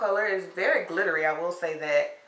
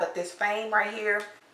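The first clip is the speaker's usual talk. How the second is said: ordinary talk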